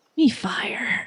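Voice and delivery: soft, private little whisper. Voicing Boba after vaulting up a cliff: whispering to self. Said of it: "Boba whispers to themselves".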